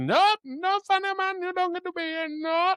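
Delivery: very high, curt, dismissive delivery. Retelling a movie scene, imitating Janosz: Janosz impression. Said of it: "And Janos again is like".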